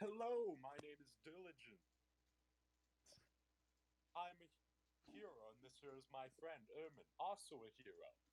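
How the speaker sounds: high-pitched voice of a magic talking sword. Voicing a summoned sword as it introduces itself: talking sword voice. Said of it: "My character's going to summon the sword, and it's going to go".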